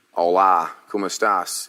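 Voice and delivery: put-on Australian accent over Spanish. Answering a podcast question about cringe-worthy phrases, Australian accent. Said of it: "with an Australian accent".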